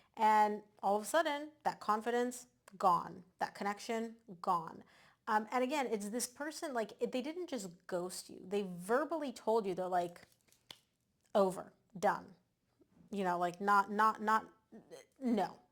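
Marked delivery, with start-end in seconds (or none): 13.1-15.5 stuttering, stammering, louder. Describing being coldly told by someone that it's over, stuttering. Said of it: "the reason I'm stuttering".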